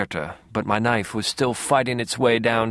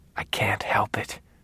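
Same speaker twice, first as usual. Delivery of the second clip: soft whisper; 6 dB quieter than usual. Narrator reads Dex answering Harry's ghost, whispering back. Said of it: "I whispered back".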